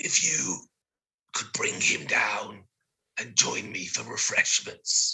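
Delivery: harsh rasping voice. Voicing the little friend who pats you on the shoulder, horrible raspy voice. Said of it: "with a horrible raspy voice to you".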